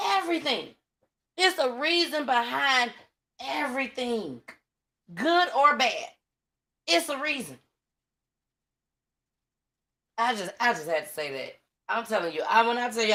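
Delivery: getting teary-eyed. Talking to Willie on his show, getting teary-eyed. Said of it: "I'm getting teary-eyed right now".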